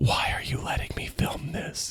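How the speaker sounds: whispered under-the-breath mutter, half to oneself. Retelling what the documentary filmmaker said: imitating someone muttering under breath. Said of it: "under his breath goes like".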